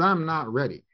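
ordinary talk, nothing marked

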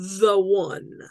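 mocking quote-mark tone on 'the one'. Speaker addressing single listeners repeats a phrase in air-quote tone on 'the one'. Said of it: "Can you hear the air quotes in my voice?".

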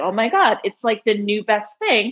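ordinary talk

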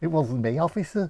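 Merseyside accent. Trying regional accents on one phrase, the speaker does a Merseyside accent.

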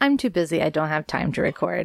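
ordinary talk, nothing marked

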